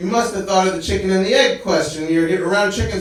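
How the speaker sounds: ordinary talk, nothing marked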